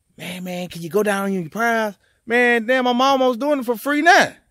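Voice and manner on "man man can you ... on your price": mock whispering. Retelling how customers ask for a lower price: imitating someone whispering. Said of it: "then you whispering".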